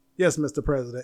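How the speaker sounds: put-on flat, deadpan delivery. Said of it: "She was like deadpan tissue".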